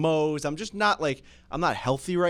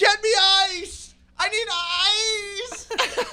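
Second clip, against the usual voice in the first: very high shriek, "ice" stretched long. Retelling a painful moment, reenacting screaming out to the old lady. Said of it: "I screamed out to the old lady".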